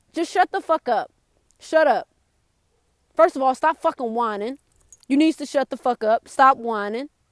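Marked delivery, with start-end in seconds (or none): none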